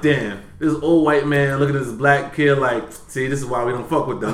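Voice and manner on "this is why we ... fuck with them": ordinary talk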